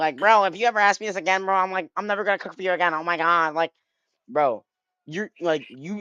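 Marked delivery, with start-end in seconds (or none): 0.2-3.5 put-on grandma voice, shrill, loud screaming. Imagining grandma's reply to a pancake request, imitating grandma screaming. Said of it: "she gonna be screaming at me".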